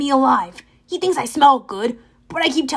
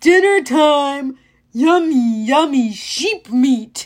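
slow, booming, bellowing monster voice, time drawn out; 4 dB louder than usual. Reading a story aloud as the monster speaks: bellowing monster voice. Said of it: "the monster bellowed".

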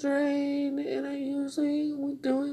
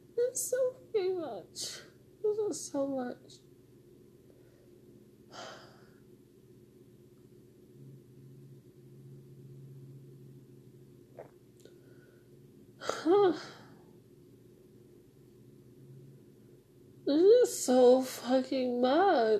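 tearful crying, breaking down in tears; 3 dB quieter than usual. Speaker asks why they are crying with no reason, crying. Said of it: "why am I crying now?".

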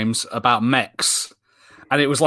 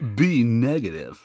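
put-on California accent, done for laughs; 2 semitones lower, 3 dB quieter than usual. Asked by a co-host to redo last week's bit, saying it in a california voice. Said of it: "like California voice, can you just please say B negative?".

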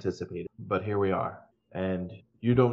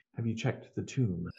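quiet, soft, hushed half-whisper; 6 dB quieter than usual. Voicing a character quietly asking the group a question: half-whispering. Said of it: "he whispers more out of courtesy".

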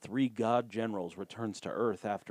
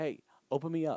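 put-on child voice, higher pitched; 7 semitones higher than usual. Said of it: "it sounds like children".

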